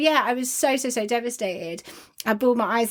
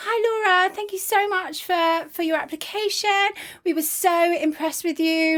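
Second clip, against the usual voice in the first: sunny, upbeat, cheerful tone, pitched up; 7 semitones higher than usual. Retelling a phone call from a caller about an application: imitating a cheerful caller. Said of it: "so cheerful".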